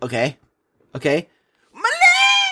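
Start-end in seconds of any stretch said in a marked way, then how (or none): 1.7-2.5 high, loud pained cry, "leg" drawn out. Showing their own take on a Stormtrooper shot in the shoulder, Stormtrooper cry after getting shot. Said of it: "I'm a stormtrooper. I just got shot".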